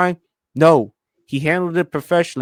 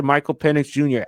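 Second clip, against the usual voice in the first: plain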